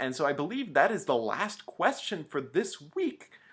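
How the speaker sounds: voice cracking badly partway through the line. Wrapping up the week's questions, the host speaks with voice cracking. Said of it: "my voice cracked there big time".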